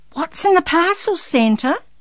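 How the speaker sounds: very high, loud, eager voice. Narrator reads Darren asking Santa about the parcels, eager question. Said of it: "Darren asked eagerly".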